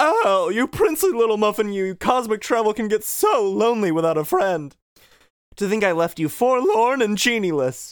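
over-the-top flamboyant delivery, high and swooping. Retelling a character hugging Pete, mistaking him for Aladdin, in a flamboyant voice. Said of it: "I'm a little too flamboyant".

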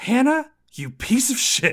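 very high, loud, furious fancy-lady shriek. Retelling Mrs. Quain rushing the room at Hannah: Mrs. Quain's mock-furious fancy-lady voice. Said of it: "in like her fancy lady voice".

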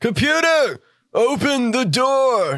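shouting. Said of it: "I'm just yelling".

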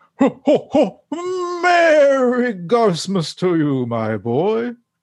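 jolly, high-pitched, swinging delivery. Opening the Garfield podcast, the host greets his co-host: Santa voice. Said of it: "it sounds like Santa".

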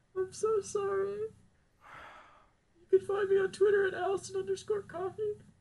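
crying while talking. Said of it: "Say it without crying".

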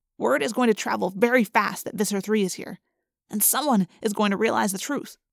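plain reading voice

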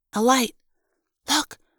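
hissed, barely voiced. Reading a first-person story, the narrator speaks to three staring companions: hissed. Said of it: "I hissed".

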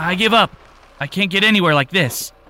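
high, frantic, hysterical, out-of-control shouting. A man hobbles onto the road in front of a vehicle, shouting hysterically. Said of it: "As [name] shouted hysterically".

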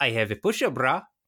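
exaggerated put-on Eastern European accent. Retelling a show's scene, quoting Tanya: Tanya's hammy Eastern European accent. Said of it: "these are the hammiest accents ever".

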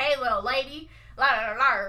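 put-on macho, manly Western movie cowboy voice. Retelling how a character tries to act manly like in Westerns: imitating a manly Western cowboy. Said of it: "Westerns, basically".

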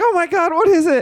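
put-on very high, freaked-out, panicked shriek. Retelling a drive when a possum jumped out: imitating wife screaming. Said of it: "she freaks out and she screams".

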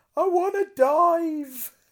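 very high, very loud, shrill, drawn-out scream. Retelling what a fighter screamed while caught in a submission; imitating a scream. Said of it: "was just screaming".

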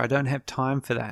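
plain

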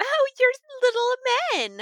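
very high, swooping, loud sing-song princess voice.

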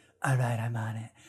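weird, flat, strange character voice. Praising how a film character developed, doing a weird Nebula impression. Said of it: "she's always got that weird voice".

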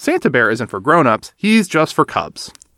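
ordinary talk

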